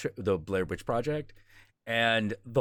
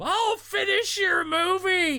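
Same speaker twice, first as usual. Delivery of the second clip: acted, very high, stretched-out, drawn-out screaming; 3 dB louder than usual. Retelling a movie scene where a character screams to the asylum: imitating someone screaming. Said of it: "is screaming to the asylum".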